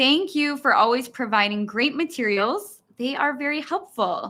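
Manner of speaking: ordinary talk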